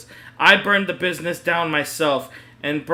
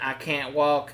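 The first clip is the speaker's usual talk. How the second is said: quieter, repetitive put-on southern game character voice; 4 dB quieter than usual. Reading a story aloud, the speaker quotes Cammy blocking the TV, imitating Cammy's southern NPC voice. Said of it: "talking like an N P C, saying on repeat, in a southern accent".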